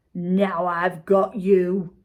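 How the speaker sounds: very slow, drawn-out growl. Reading a story where a man finally catches a runaway wok, growling. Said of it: "he growled".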